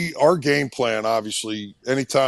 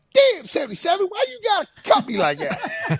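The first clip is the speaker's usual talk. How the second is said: very high, swooping, swinging griping voice. Recalling an opponent he kept cutting, quoting Bruce in his real high voice. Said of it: "he had this real high voice".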